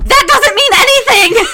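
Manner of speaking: very high, very loud, shrill shriek. Retelling watching a show when a masked figure appeared, retelling a scream. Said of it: "and I screamed".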